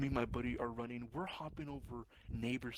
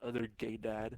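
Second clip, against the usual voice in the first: ordinary talk, nothing marked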